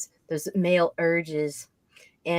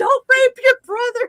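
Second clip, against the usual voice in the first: put-on very high-pitched, very loud, shrill girlish scream; 11 dB louder than usual. Picturing what the neighbors would hear: imitating a little girl screaming. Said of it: "all they're gonna hear is this little girl screaming".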